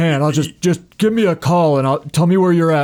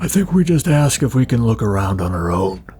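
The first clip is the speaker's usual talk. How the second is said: low, confidential, private-sounding aside; 5 semitones lower than usual. As Tina, turning to Jonathan during the scene, under her breath. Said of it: "Tina turns to Jonathan under her breath".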